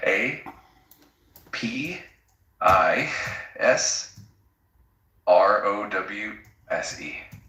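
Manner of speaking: very slow, spelled out one letter at a time. Spelling out a word's letters for a listener: slow, letter by letter spelling. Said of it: "Nice and slow".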